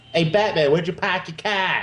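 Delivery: put-on high Boston accent. Speaking to Batman in a joke about the film: Boston accent. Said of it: "Why are you the only person in Gotham City with a Boston accent?".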